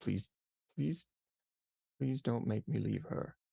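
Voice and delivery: begging, pleading voice through whimpers. Narrating a game, voicing a tearful character: very quiet whimpering plea. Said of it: "you hear him very quietly say".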